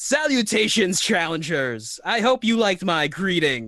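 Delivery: big, high voice booming out. Voicing a figure who touches his throat and greets the challengers: booming voice. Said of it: "then a voice booms out".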